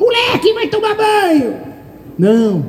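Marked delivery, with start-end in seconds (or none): 0.0-1.5 put-on high, yelling mother voice. Contrasting the Holy Spirit with a mother ordering her kid to bathe, imitating a mother yelling. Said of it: "Ele não grita, ele não é que nem a minha mãe".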